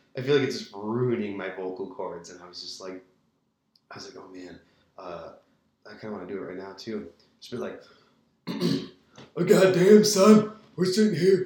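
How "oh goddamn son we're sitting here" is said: put-on gruff wrestler voice. Recording a podcast, speaker slips into a Stone Cold Steve Austin impression. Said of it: "I did that fucking Stone Cold Steve Austin voice earlier".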